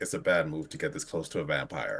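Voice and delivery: low, hushed half-whisper. Describing a vampire twisting her head around, the speaker voices her: half-whispering. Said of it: "just whispers".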